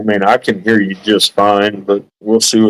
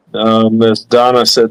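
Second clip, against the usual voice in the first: ordinary delivery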